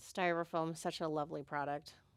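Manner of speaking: dry sarcasm.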